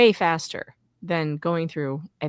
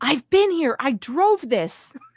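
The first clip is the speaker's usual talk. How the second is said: high-pitched, loud yell; 8 semitones higher, 4 dB louder than usual. Retelling a friend recognizing an intersection: imitating a friend yelling. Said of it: "Flux starts yelling".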